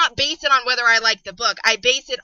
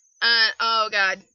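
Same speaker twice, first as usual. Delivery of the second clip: ordinary talk, nothing marked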